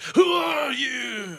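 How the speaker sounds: high, slow, booming shout. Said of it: "I shout".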